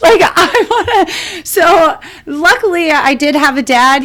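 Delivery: high-pitched talking through laughter.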